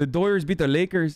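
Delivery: exaggerated fake Mexican accent. Asked to do a Mexican accent, the speaker demonstrates it; bad Mexican accent. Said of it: "do your Mexican accent now".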